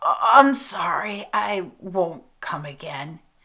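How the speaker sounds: choked-up, strangled voice, spoken very slowly. Narrator reads Reeve answering Janie's mother, in a strangled voice. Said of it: "In a strangled voice he said".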